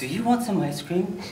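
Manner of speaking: plain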